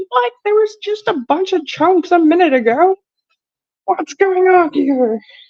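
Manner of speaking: high cartoon alien spaceman voice. Watching chunks melt, the speaker does a Marvin the Martian voice. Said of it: "My best Marvin the Martian voice".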